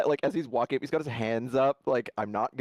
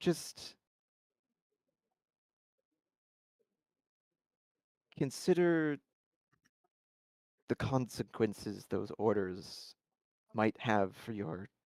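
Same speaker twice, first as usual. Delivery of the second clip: sincere, earnest tone, quieter; 7 dB quieter than usual. Voicing a character who warns two Kitsune about their orders: earnest tone. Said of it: "it's very earnest".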